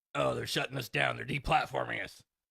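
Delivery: rough, creaky broadcaster voice. Reacting to a debate clip, doing an Alex Jones voice. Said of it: "I do a pretty good Alex Jones voice".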